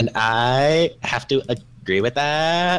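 dopey, silly, goofy put-on voice, drawn-out "I". Agreeing with the other speaker about playing World of Warcraft together, in a dumb voice. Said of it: "the kind of dumb voice I just did there".

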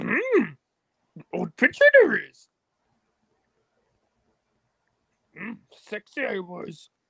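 swooping, sing-song character voice, pitch all over. Joking about an old picture: Yoda voice. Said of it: "don't I do such a good Yoda voice?".

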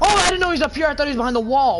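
high, loud, startled yelp.

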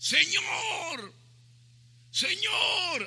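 very high, loud, carrying cry.

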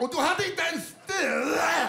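high, slow mock screaming. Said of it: "hon och bara skriker".

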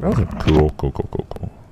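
soft, indistinct, distracted mutter under the breath. Catching up on the chat while playing, mumbling. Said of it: "I'm mumbling".

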